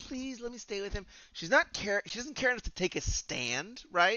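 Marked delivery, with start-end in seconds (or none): 0.0-1.1 polite, high, pleading voice. Acting out a character's line while critiquing a scene: imitating a character begging. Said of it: "She's begging".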